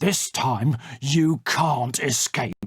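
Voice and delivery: snarled, menacing wolf voice. The wolf returns to the door once more and threatens the one who opened it, snarling. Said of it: "he snarled".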